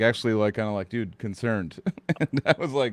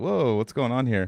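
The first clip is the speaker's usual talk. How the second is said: put-on thrown, baffled, puzzled tone. Retelling greeting someone who didn't recognize him, retelling own confusion. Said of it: "I got like super like confused".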